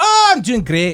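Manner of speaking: very high, slow, put-on Scottish brogue. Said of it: "with my little brogue".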